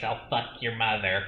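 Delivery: raspy, rasping demonic voice. Praising an actress's performance, a speaker quotes her line in Pazuzu voice. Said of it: "giving this Pazuzu voice".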